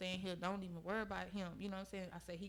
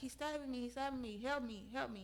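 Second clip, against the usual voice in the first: high, frantic, urgent voice, held in; 5 semitones higher than usual. Recounting being stabbed, the speaker acts out screaming for help. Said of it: "So of course I'm screaming".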